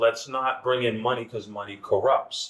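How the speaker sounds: normal talking voice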